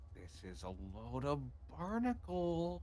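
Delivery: secretive, hushed half-whispered aside. In a role-play game, a character leans in to another character: half-whispering. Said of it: "leans into Maverick and just whispers".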